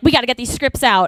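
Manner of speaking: ordinary talk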